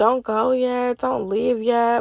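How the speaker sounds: whispered voice. Retelling how a friend urged her to stay: imitating a friend whispering. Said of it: "she's kinda whispering to me".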